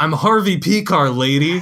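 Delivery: put-on acted irritated child voice, curt, slow, deliberate. Retelling a movie scene where a trick-or-treating kid answers: imitating an angry kid. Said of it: "he's just angrily like".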